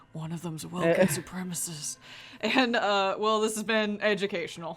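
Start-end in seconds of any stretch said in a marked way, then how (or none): 0.1-1.9 whispered. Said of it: "I say in a whisper".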